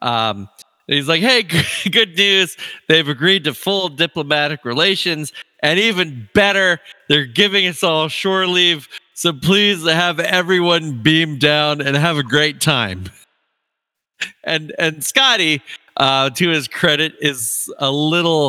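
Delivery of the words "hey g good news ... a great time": mock beaming, cheerful, delighted delivery. Retelling a call where the captain is all smiles: imitating smiling Captain Kirk. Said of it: "all smiles".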